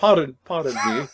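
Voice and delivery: put-on prim, proper British accent, put on. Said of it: "her with a prim and proper British accent as a gag dub".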